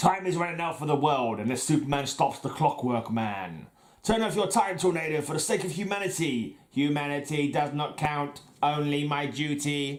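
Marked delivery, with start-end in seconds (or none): 4.0-10.0 put-on robot voice. Reading comic speech bubbles aloud, the Clockwork Man's line: robot voice. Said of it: "I do a good robot voice though".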